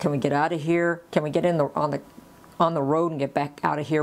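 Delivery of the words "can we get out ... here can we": plain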